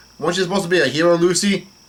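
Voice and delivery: ordinary talk, nothing marked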